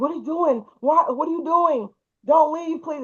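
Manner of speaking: mock pleading, high and begging. Retelling how he begged her not to leave: imitating someone begging. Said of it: "and begging me not to leave".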